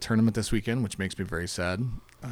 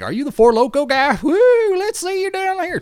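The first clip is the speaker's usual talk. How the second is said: put-on Oklahoma accent, very high-pitched and very loud; 9 dB louder than usual. Imitating people in Texas reacting to the speaker: put-on Oklahoma accent. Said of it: "your fantastic Oklahoma accent right there".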